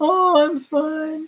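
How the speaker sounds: put-on very high, crinkly little old-man voice. Retelling the reply that comes back to a recorded greeting, crinkly little old man voice. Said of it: "this crinkly little voice, like a little old man".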